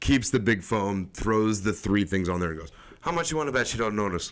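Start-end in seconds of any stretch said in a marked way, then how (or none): 3.0-4.3 put-on very strong Irish accent. Retelling what the Irish bartender said to the speaker: imitating Peter's Irish accent. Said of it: "Very Irish".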